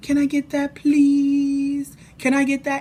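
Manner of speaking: put-on sweet, very high, slow little-kid baby voice. Showing how to ask for something sweetly: sweet baby voice. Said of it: "You have to put your baby voice on and you have to look sweet like this".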